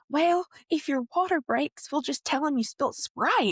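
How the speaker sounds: put-on super thick country accent, laid on, high. Retelling what a little brother said in the theater: thick country accent. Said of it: "He has a super thick country accent".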